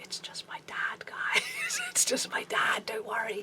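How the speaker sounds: hushed, slow, very soft, barely voiced whisper. Speaker retells turning away to tell the others something: retelling a whisper. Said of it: "just kind of like whisper".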